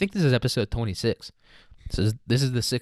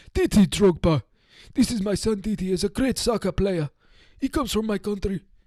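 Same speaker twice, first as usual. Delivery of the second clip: rough put-on Russian accent, very high and raspy; 10 semitones higher than usual. Acting out a father introducing his soccer-player son: raspy Russian accent. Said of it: "I did, like, a Russian accent, but I made it raspy".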